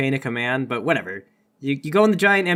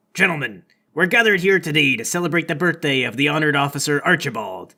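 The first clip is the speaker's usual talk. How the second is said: ceremonious, formal ship captain's address voice. A captain climbs a raised deck to address everyone at the birthday: captain addressing the crowd. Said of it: "This is [name], / The captain climbs up to a convenient raised deck to address everyone. He says, / This is [name]".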